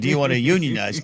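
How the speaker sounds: ordinary delivery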